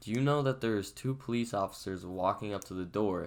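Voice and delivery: ordinary talk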